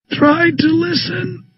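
dragged-out, smothered, very slow, very high. Pinned face-down under someone's weight, the narrator speaks into the floor, very slow, muffled. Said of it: "I say very slowly, muffled by the floor".

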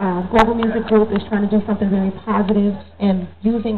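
normal talking voice

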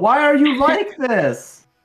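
very high, acted, shouted outburst. Playing a character who yells at another: yelling in character. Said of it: "I yell".

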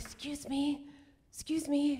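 soft, slow, high, drawn-out half-whisper. Retelling leaning over to the woman across the aisle: imitating own half-whisper. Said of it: "lean over and I whisper".

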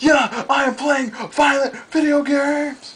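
high, slow shouted cartoon character voice. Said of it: "He's like".

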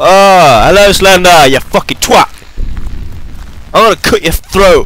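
shouting out loud. Gaming with headphones on, taunting the game's villain: shouting. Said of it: "that's probably why I'm shouting a lot".

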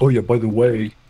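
teasing, mocking parody of another delivery. Mocking how the other speaker announced the timer: mocking imitation of the other speaker. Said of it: "you did it like".

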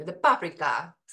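put-on thick, laid-on Hungarian accent. Quoting her husband's grandmother, thick hungarian accent. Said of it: "she had this very thick Hungarian accent".

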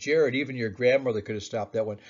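ordinary talk, nothing marked

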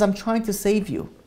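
put-on voice speaking through tears. Retelling a story of a father answering his son: imitating a tearful father. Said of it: "with tears in his eyes".

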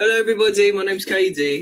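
put-on British accent. Taking a turn to introduce themselves to everybody, in a put-on british accent. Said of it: "Why are you British again?".

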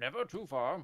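put-on old hermit wizard character voice. Answering a co-host's remark that he's not too far, in an old wizard voice. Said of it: "That was a good Gandalf voice".

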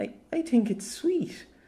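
half-mumbled, very high, slow half-mutter. Narrator reads the manservant's remark after the others mock Sir Havler, half-muttered. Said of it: "half muttered the also blushing manservant".

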